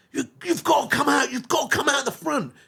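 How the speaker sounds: frantic, breathless, high, rushed panicked voice. Retelling how the uncle ran in to fetch the granddad: panicked. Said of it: "in this much panic like that".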